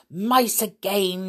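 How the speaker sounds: sour, grumbled complaint, reluctant tone. A witch at her window hears mice again, grumbling. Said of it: "she grumbled".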